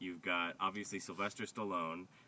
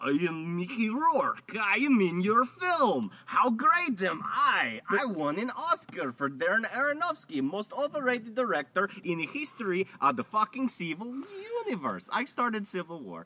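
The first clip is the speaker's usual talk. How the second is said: put-on fake Russian accent, higher and louder; 11 dB louder than usual. Mocking an actor's role in a film: Mickey Rourke's fake Russian accent. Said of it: "Mickey Rourke and his fake Russian accent".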